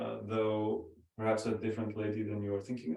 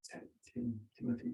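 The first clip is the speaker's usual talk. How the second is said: halting, stumbling whispered mutter under the breath; 14 semitones higher, 7 dB quieter than usual. Voicing a character trying to recall a name while approaching: whispering to himself. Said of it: "whispering to himself".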